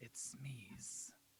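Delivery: barely audible, very quiet and passive. Player describing their character's line, said as quietly as he can muster. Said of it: "as quietly as he can muster".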